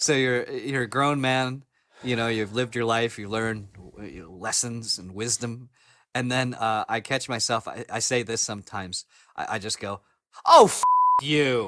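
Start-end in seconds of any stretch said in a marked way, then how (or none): 10.5-11.7 put-on sassy tone, louder. Retelling what he says to his TV while alone, mock-sassy. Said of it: "I say it like I got some sass on it".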